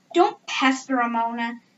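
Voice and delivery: plain reading voice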